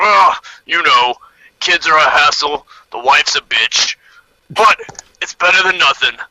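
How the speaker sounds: grunting, grunted-out troll voice. A troll answers a question about his family, grunting troll voice. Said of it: "The troll grunts back".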